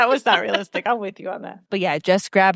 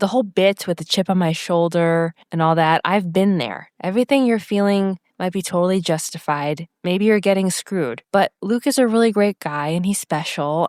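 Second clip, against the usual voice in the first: usual speaking voice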